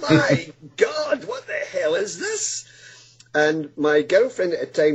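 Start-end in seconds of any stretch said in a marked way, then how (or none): 0.0-2.6 scream, high and slow. Retelling seeing glowing lights around a woman: imitating own scream. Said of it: "I screamed out like a big girl".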